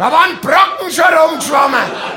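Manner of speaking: shrill scream, like a stuck pig.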